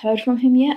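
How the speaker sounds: rising tone at the end on yet. Speaker demonstrating a shortened question, rising tone at the end. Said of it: "hear that my voice goes up at the end?".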